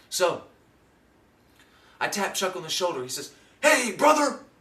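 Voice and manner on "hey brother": mock eager excitement, very high, very loud. Retelling how a man greeted the speaker: imitating Chuck's excited greeting. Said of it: "This is how he talks all the time".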